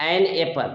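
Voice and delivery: full, strong "an", emphasized. Hindi-language lesson on English articles: stressed full-form an. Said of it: "जोर दिया".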